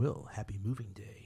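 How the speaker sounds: put-on, soft, sinister, threatening, menacing tone. Acting out a line from a letter sent to a family, mock-menacing tone. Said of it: "that's got such a menacing tone to it as well".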